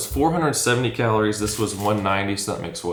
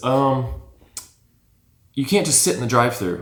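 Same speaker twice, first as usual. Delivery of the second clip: put-on snippy, snotty attitude; 3 semitones higher than usual. Retelling what a drive-thru worker said: imitating an attitude. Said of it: "with an attitude".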